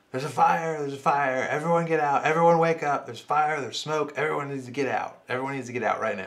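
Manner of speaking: panicked, loud, high frantic screaming. Retelling an innkeeper waking sleeping guests late at night: imitating someone screaming. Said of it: "screaming at the top of his lungs".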